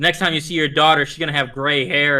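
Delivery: ordinary talk, nothing marked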